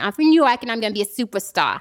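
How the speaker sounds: put-on New Yorker accent.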